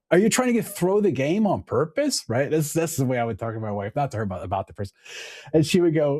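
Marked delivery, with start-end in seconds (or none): 0.1-2.2 high, fed-up, exasperated, ticked-off complaint, acted out. Speaker retelling what he said to his wife about a teammate: retelling being ticked off. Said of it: "And then and I get ticked off".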